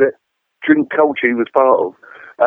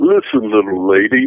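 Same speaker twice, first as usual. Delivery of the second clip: mock condescending, patronising, talking-down tone; 5 semitones lower than usual. Retelling a big promoter's reply to a complaint: imitating a patronising tone. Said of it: "all patronising".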